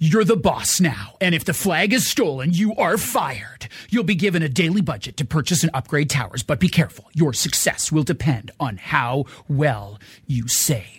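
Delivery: epic, dramatic movie trailer announcer narration voice. Show host reading a description aloud, in best movie trailer voice. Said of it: "I'm going to read this in my best movie trailer voice".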